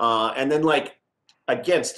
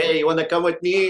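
put-on French accent; 4 semitones higher than usual. Retelling an invitation from the strength coach, in Steph Dubé's French accent. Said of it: "because this French accent".

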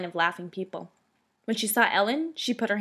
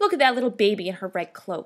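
ordinary delivery, nothing marked

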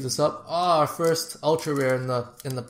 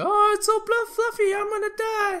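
very high, swooning, gushing voice. Showing a shiny card and quoting Agnes from Despicable Me: Agnes voice. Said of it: "Agnes from Despicable Me, how she's like".

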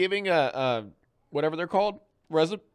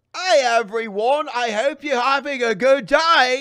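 clumsy, bad, loud put-on Australian accent; 7 semitones higher, 7 dB louder than usual. Trying out accents by greeting everyone, in a bad Australian accent. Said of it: "You're so bad at accents".

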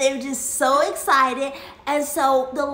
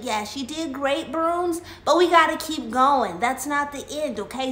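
ordinary delivery

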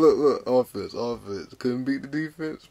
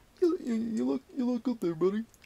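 put-on puppet voice, much higher pitch; 10 semitones higher, 6 dB quieter than usual. Asked how Kermit talks, answering the other speaker in a Kermit the Frog voice. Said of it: "How does Kermit talk?".

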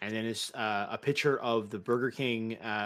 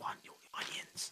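hushed whisper, much quieter. Standing right next to a teammate, calling out an onion order, whispering. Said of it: "I'm like whispering it".

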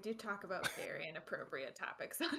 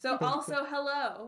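loud yelling voice, higher and louder; 5 semitones higher, 6 dB louder than usual. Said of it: "Was I yelling? I feel like I was yelling".

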